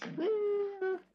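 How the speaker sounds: squeaky silly voice.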